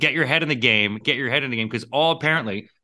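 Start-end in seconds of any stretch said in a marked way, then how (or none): none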